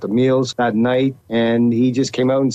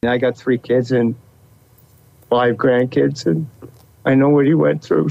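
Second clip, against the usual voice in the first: choked-up, halting voice, words broken by emotion. Man with kids and grandkids recalling the news of Sam's return, emotional. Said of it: "Just emotional".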